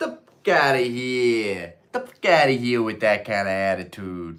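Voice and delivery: terrible put-on Jersey accent, drawn out. Retelling his comeback to people who call sellers scalpers, in a terrible Jersey accent. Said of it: "It's my terrible uh, Jersey accent".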